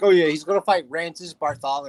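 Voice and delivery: mocking, tongue-in-cheek, sarcastic throwaway delivery. Retelling own joke about an unlikely boxing match: imitating own sarcastic remark. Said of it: "Like, sarcastically".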